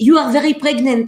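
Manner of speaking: put-on French accent. Retelling what a French doula said: imitating a French accent. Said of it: "she would speak with an accent like this".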